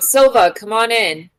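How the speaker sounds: long, loud called-out shout. A player's character calls Silva to come inside: shouting. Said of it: "I'm just gonna shout".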